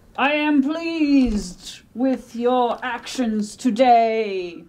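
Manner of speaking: slow, eerie skull voice, "today" drawn out. Voicing the spooky skull in a scene at an altar; spooky skull voice. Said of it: "the spooky skull is going to say".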